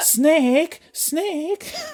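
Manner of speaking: very high-pitched, called-out character voice. Describing a game, speaker imitates a character calling the hero: Mei Ling impression. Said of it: "That's my impression of Mei Ling".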